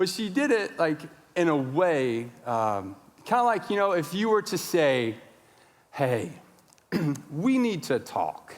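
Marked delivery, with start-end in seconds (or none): 5.9-8.5 eerily calm, very even delivery. Showing how someone says something ominous: imitating a really calm tone. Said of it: "it's really calm".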